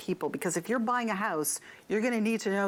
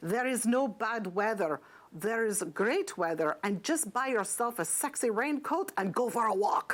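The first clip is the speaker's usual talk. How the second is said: terrible put-on Scottish accent, slow. Retelling what someone said about the weather, in a terrible Scottish accent. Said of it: "I have a really terrible Scottish accent".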